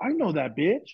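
blunt, brash, unfiltered loudmouth blurt. Retelling what a loud man said about a passing woman: imitating a loud man. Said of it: "he's loud as a motherfucker".

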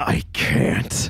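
growled, growling delivery. Reminded of the deal, a character gripping the scepter turns and answers with a growl. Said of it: "He growls out".

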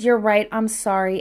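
normal talking voice

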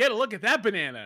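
sudden, mild, tactless blurted exclamation. Telling a story about a friend at Pride watching a float: retelling a super loud shout. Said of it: "super loud".

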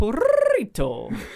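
high squeaky voice with a rolled r. Taking up a challenge to roll the r in a high voice. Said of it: "If you were able to roll your R in a high-pitched voice, I'd be really impressed".

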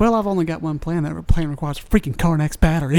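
ordinary talk

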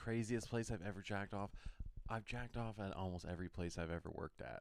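breathy, soft, hushed, voiceless half-whisper. Answering a question about the craziest place, half-whispering. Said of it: "Can you stop whispering?".

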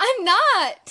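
loud, high, indignant tone.

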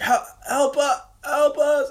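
mock screaming. Speaker retells voices cutting into a crackly radio transmission, retelling a scream. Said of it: "the way they screamed".

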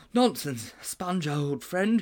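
gasped out. A boy, doubled up after running, answers his gasping friend, gasping. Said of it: "gasped Mildew".

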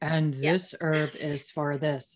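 very low, level, flat monotone drone. Acting out just sitting there talking to the class, in a flat monotone. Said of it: "all monotone".

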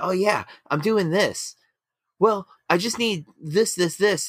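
very high-pitched, confident, sure-of-itself tone. Retelling how addicts lie at first: imitating confident lying. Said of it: "starts very, like, confident".

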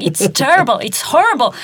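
acted high, angry, urgent, pleading outburst. Recounting walking out of a play with their father, acting out their angry past self. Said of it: "And I was like so angry there".

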